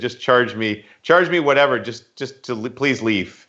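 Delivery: ordinary talk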